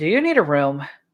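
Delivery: flat deadpan delivery. Voicing Tori, who looks at the two and asks: deadpan. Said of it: "Tori deadpan looks at".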